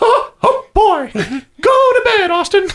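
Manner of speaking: cartoon mouse voice, very high-pitched. A dad telling his little boy to go to bed, in a Mickey Mouse voice. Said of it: "You're Mickey Mouse?".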